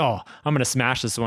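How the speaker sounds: put-on acted excited child voice. Retelling how a golfer acted before a swing: imitating Bryson like an excited kid. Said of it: "like kid in a candy store is like".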